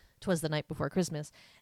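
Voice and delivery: ordinary talk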